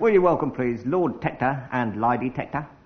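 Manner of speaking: Cockney-accented speech.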